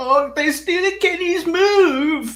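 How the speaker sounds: high-pitched, slow mock sobbing. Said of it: "it kills every A E W fan inside".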